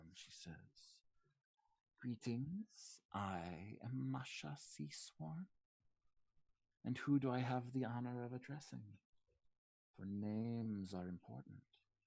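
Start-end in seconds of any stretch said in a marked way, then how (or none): 2.0-11.6 put-on very old lizard-creature woman voice. Game master voices the woman behind the desk greeting the party, as Masha Seasworn, old lizardfolk woman. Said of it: "a short lizard folk woman, very old".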